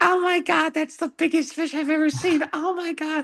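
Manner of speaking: play-acted, very high-pitched woman's scream. Retelling how a lady reacted to a big fish: imitating a woman screaming. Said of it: "screaming the whole time".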